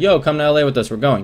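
ordinary talk

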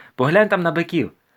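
loud, high-pitched calling out. A man calls after a companion heading out the door, shouted after him. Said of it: "крикнув йому слід Охрім".

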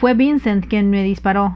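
plain

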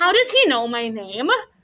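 ordinary delivery

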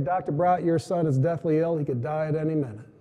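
ordinary talk

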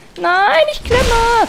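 high, slow, drawn-out panicked wail.

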